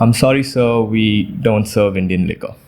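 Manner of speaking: put-on courteous tone, slightly smug. Retelling a waiter's reply at a restaurant: imitating a waiter, nice and a little smug. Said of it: "very nicely and a little smugly".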